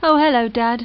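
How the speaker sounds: sounding a bit depressed. Answering a phone call from dad: sounding a bit depressed. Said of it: "You sound a bit depressed".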